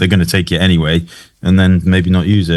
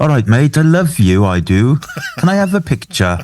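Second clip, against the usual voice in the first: chatty put-on Welsh accent, high and slow; 9 semitones higher than usual. Retelling a stranger in the street asking for a picture: imitating a Welsh bloke. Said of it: "this Welsh bloke comes up to him".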